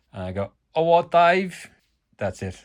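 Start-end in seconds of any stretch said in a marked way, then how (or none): 0.8-1.7 put-on very loud, high-pitched London Cockney accent. Greeting a work colleague called Dave, Only Fools and Horses Cockney accent. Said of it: "That's as London as I get".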